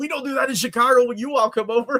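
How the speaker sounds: mock argumentative retort. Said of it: "Americans arguing with the guy".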